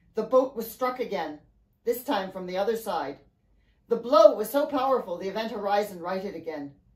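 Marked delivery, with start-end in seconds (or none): none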